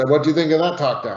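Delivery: ordinary delivery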